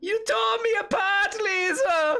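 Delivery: shrill, very high, stretched-out yell. Voicing a man who lost all his money, pacing back and forth: shouting. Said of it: "he just shouts out".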